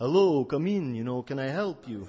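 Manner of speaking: put-on Eastern European accent. Telling a story, quoting a guy who appears as someone walks in, Eastern European accent. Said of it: "he's got this Eastern European accent".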